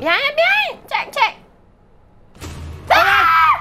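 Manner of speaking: frightened screaming. Playing a horror game with another player: screaming in fright. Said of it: "you're screaming, don't scream!".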